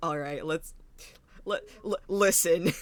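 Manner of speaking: mock intimidating, deceptive tone. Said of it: "intimidating or, like, de-, deceptive".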